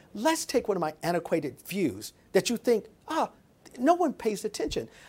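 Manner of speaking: ordinary delivery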